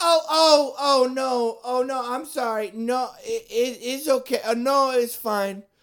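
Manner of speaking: very high, shrill, very slow, over-loud, drawn out. Retelling a customer's reply in a liquor store, imitating someone talking loudly. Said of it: "so loud".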